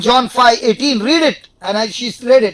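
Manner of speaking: plain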